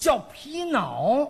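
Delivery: 皮袄 pronounced with a Tianjin accent. Showing how Tianjin vendors call a fur coat: Tianjin accent. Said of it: "有天津口音了".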